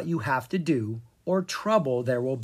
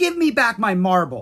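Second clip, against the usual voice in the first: loud, high-pitched yell; 6 semitones higher, 7 dB louder than usual. Narrator reads Violet Briggs as a toad hops away with her marble, yelling. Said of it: "Violet Briggs was yelling at a toad".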